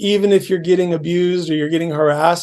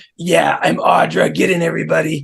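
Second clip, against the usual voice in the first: poor put-on female smoker's voice, slower. Retelling how a lady greeted the group by a car, imitating Audra's smoker voice. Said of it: "she had like Smoker's voice really bad".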